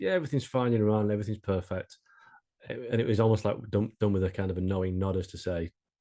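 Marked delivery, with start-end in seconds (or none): 0.0-2.0 mock sarcastic tone. Retelling what one of the guys said: imitating a sarcastic remark. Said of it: "you could tell he was being sarcastic".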